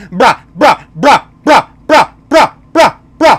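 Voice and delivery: very loud, high, dog-like yapping on brah. Complaining about people constantly saying brah, mocking dog-like repeated 'brah'. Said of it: "Sounds like a fucking dog".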